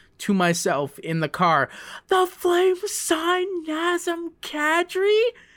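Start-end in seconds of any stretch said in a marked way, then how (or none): 2.1-5.2 put-on shrill, very high-pitched disbelieving scream. Speaker recalling hearing breaking news alone in the car, retelling a scream. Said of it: "I screamed at pretty much at the top of my lungs".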